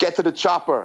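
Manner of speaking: aggressive bark. Saying a line on request from another speaker: mock aggressive delivery. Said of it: "say it really aggressively".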